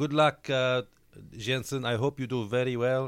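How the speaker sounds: attempted Spanish accent, pitched high.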